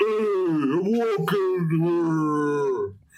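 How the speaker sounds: New York accent with "hey" stretched out. Dared by a co-speaker to just try it, do Andre the Giant as a New Yorker. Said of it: "You're Andre and you're New York at the same time".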